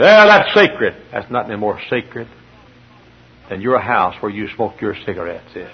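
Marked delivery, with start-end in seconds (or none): 0.0-0.9 high, loud, scandalized, blurted protest. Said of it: "he said".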